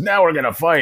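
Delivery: put-on very high, loud, drunken orc warlord voice. Describing a game's voiceover, the speaker imitates a drunk orc. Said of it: "like a drunk orc".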